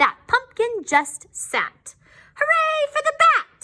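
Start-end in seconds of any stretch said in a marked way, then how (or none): 2.3-3.6 witch voice crying out, very high and shrill. Narrator reading a children's story, the witch cheers: shouting witch voice. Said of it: "shouted the witch".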